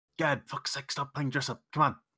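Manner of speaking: yelling in a whisper. A player voices their character yelling back at someone, whisper-yelling. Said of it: "I whisper, yell back".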